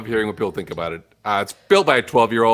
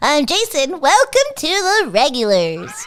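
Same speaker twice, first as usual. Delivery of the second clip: very high, slow, swooping, helium-like sing-song voice; 3 dB louder than usual. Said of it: "it sounds higher".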